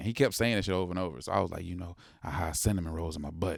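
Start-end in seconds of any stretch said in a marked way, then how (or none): 1.6-3.6 whisper, lower and quieter. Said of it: "so I whispered it back to him".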